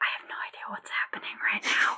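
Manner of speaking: soft, breathy, barely voiced whisper. Playing a character answering another character's whispered question, whispering back. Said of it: "I whisper back".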